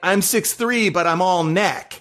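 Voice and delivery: ordinary talk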